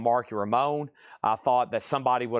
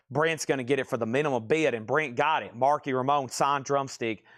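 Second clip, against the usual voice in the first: plain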